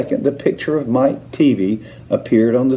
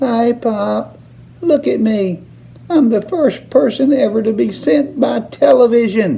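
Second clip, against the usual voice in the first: tiny, squeaky, very high voice; 10 semitones higher than usual. Narrating Mike Teavee speaking out of the television set, in a tiny squeaky voice. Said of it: "A tiny little voice, no louder than the squeaking of a mouse".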